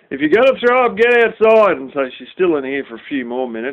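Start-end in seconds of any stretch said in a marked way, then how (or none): 0.1-1.7 acted, raised, high-pitched yell. Recounting how she heard her gag and shouted at her: retelling a yell. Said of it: "So I'm yelling".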